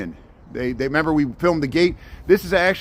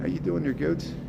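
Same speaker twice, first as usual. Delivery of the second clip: ordinary talk, nothing marked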